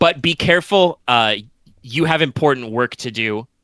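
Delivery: ordinary delivery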